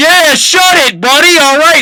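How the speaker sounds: very loud, very high-pitched shout. Retelling a neighbor leaning out a window: imitating a neighbor yelling. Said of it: "multiple neighbors yelling at us".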